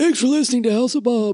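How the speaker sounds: relaxed, loose voice.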